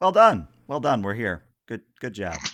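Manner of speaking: offhand, heavily sarcastic, swooping pitch. Voicing the ship after a rough landing: nonchalant, sarcastic. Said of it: "very nonchalantly, but still sarcastic as hell".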